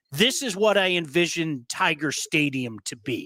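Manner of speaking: usual speaking voice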